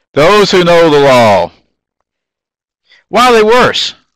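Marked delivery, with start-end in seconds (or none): 3.0-3.9 sudden very high outburst of a shout. Asking the listeners a question about the passage: yelling. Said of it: "sorry, I didn't mean to yell".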